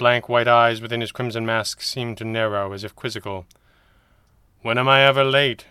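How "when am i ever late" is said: serious, earnest, sincere tone, slightly raised. A masked man answers a question, serious. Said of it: "he asked seriously".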